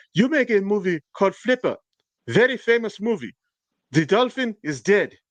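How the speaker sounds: unconvincing put-on German accent. Retelling a favorite question from someone messing with a man who takes it seriously, in a put-on German accent that needs work. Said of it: "You need to work on that German accent".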